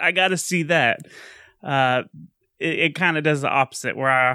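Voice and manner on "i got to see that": usual speaking voice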